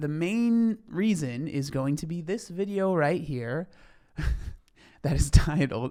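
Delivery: talking through laughter. Introducing a video title the speaker finds funny, laughing while talking. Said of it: "I'm just laughing 'cause it's so funny".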